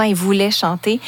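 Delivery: ordinary talk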